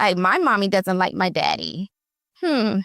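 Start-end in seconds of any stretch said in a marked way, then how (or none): 0.0-1.9 put-on small girl's matter-of-fact voice with swooping pitch. Parent retelling what their five-year-old daughter said while playing, imitating daughter's little voice. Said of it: "in her little voice, just matter of factly".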